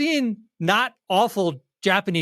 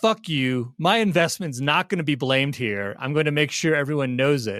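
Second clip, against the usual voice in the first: ordinary delivery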